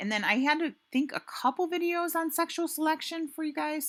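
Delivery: voice creeping up, rising very high. Addressing the viewers in a lecture video, voice going high. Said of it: "my voice is going high like that".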